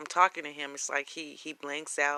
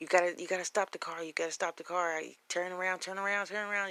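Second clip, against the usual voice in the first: acted-out frantic, insistent, repeated, panicked pleading; 4 semitones higher than usual. Retelling a man panicking in a car during a phone call: imitating someone panicking. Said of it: "he was panicking".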